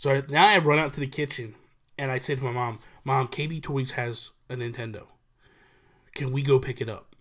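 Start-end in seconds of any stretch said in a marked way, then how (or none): none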